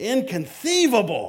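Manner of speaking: play-acted, high, impassioned, passionate outburst. Reenacting a movie scene, reacting to a climber not falling: Vizzini reacting passionately. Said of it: "he passionately reacts".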